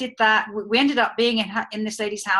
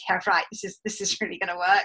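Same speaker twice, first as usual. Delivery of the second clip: heavy, disbelieving, very sarcastic tone; 3 dB quieter than usual. Retelling own past words to a companion: imitating own sarcastic remark. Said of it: "in a very sarcastic way".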